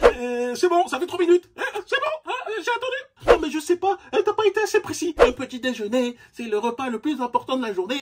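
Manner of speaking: very high, feeble, fragile, wimpy voice. Speaker doing a comic bit, in a fragile beta guy voice. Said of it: "lorsque je fais cette voix-là, c'est pour un effet comique... imiter ce que moi j'appelle le bêta fragile".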